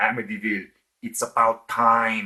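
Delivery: spoken in a put-on Austrian accent. Reading a movie title aloud the way they hear it, Arnold Schwarzenegger voice. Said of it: "in an Arnold Schwarzenegger voice".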